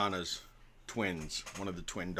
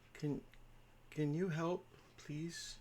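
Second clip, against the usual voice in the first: put-on very quiet, pleading, begging little-girl voice; 8 semitones higher, 10 dB quieter than usual. Voicing a little girl who asks the party for help: pleading little girl voice. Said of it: "and she's like".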